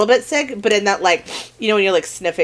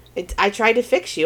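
ordinary delivery

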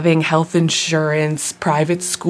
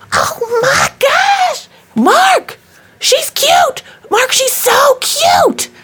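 put-on very high, loud, drawn-out squealing shriek; 5 dB louder than usual. Retelling how a girl rushed off a bus at the speaker; imitating a shriek. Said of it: "she starts shrieking".

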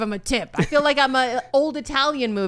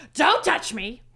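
sassy, snippy, brushing-off snap; 2 semitones higher than usual. Retelling a waiter's reply to a coworker: imitating a sassy waiter. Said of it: "He's very sassy".

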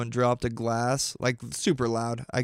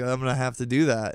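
ordinary talk, nothing marked

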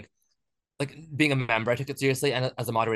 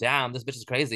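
ordinary delivery

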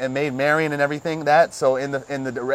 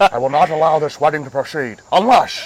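put-on proclaiming voice, English with Scottish accent bleeding through; 5 dB louder than usual. Quoting King Richard's line after saying the actor can't do English: Sean Connery impression. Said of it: "he's Scottish and still can't pull off no English accent".

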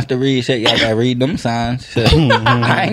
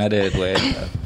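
sincere, earnest, quieter and softer delivery. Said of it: "I'm bluffing".

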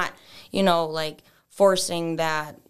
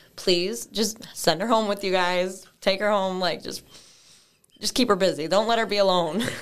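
crying, tearful, pleading voice; 3 semitones higher than usual. Speaker pleading with the guys, crying while pleading. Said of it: "Not me crying".

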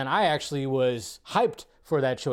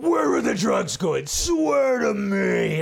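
slow, drawn-out, rough, gargly voice; 7 semitones higher, 4 dB louder than usual. Imitating Bale's Batman voice in the drug interrogation scene: gargly Bale Batman voice. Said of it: "The voice is perfect right there".

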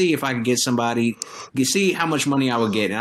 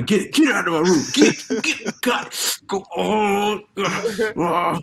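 high, very slow, drawn-out irritated yell; 6 semitones higher than usual. Imitating a friend yelling at a dog in his room: imitating Johnny yelling at a dog. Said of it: "And I'll do like Johnny".

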